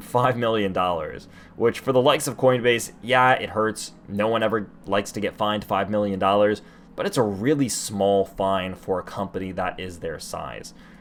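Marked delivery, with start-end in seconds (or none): 0.0-1.3 ironic, sarcastic emphasis. Discussing a class action lawsuit against Coinbase, sarcastic. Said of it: "I hope everyone notes my sarcasm".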